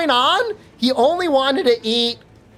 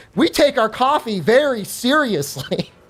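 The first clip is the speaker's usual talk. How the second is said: usual speaking voice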